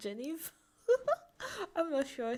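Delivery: high, loud laughing through the words. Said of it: "Sorry, I'm laughing".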